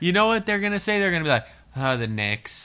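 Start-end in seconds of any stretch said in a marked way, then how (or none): 1.8-2.7 low, sad, dejected, sorry-sounding voice. Imitating Knicks fans asked their favorite team, mock sad. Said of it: "say it sadly".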